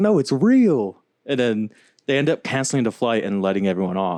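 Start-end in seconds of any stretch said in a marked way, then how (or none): 0.0-1.0 mock exasperated, pitched-up, fed-up shout. Retelling a passenger yelling at the other passengers: imitating a man yelling. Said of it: "yelling at the passengers".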